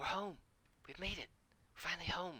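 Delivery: put-on several high, excited children talking together. Voicing the kids as the group approaches the town: excited kids' voices. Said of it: "the kids get very excited".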